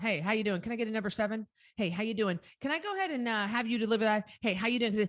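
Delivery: said quickly and flippantly, without meaning it. Showing how people rattle off a common greeting, a quick flippant greeting. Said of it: "You just say it so quick".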